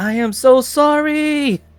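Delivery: very loud, very high, shrill cry, "sorry" stretched out. Game master voices a girl coming out of the forge, very loud. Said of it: "very loud says".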